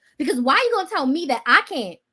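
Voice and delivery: ordinary delivery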